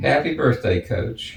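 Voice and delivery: ordinary delivery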